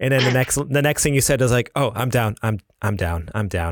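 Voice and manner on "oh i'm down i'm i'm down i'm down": slow, beaten, deflated, defeated delivery. Retelling what a housemate heard from the other room: imitating a defeated tone. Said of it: "so defeated".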